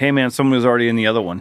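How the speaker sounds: ordinary talk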